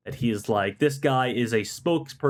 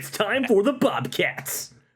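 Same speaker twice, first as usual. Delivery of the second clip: fake American accent, higher, from a European speaker; 9 semitones higher than usual. Imitating a cheer track announcer: European guy doing American voice. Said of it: "the classic European guy doing an American voice".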